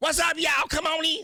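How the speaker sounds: put-on woman's voice, very high-pitched.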